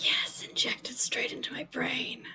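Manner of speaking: breathy, audible stage whisper. On a podcast, a co-host adds an aside to the conversation: stage whisper. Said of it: "I'm whispering that".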